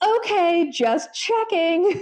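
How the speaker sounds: high, slow, sarcastic drawl.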